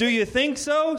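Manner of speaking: sarcastic, taunting, mocking, high pitch. Sam replies to Al, who appears as a hologram; mocking. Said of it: "Sam said mockingly".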